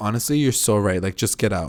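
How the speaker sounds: plain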